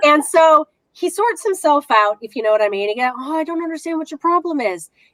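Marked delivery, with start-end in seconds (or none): 3.2-4.9 acted-out, pitched-up, defensive, self-justifying tone. Acting out a man's reply after being told to stop, mock-defensive retort. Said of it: "trying to create this this defense".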